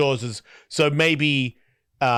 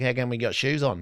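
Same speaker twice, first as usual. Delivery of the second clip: put-on mumbling bogan voice, side of mouth, quieter; 4 dB quieter than usual. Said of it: "talks out the side of his mouth".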